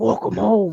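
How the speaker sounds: very deep, cryptic spirit voice. Retelling how a voice on recordings spoke: imitating a deep cryptic voice. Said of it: "his voice was very deep".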